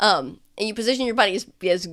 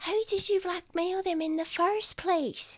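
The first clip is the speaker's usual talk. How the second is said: soft, very high half-whisper; 11 semitones higher, 7 dB quieter than usual. In a role-play about blackmailing strangers, the speaker asks a question, half-whispering. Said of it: "I'm whispering".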